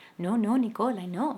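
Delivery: put-on Cuban accent. Nicole repeats her dad's reply to her; Cuban accent imitating her dad. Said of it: "That's my Cuban um, accent of my dad".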